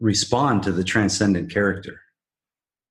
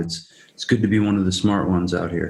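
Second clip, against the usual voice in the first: ordinary talk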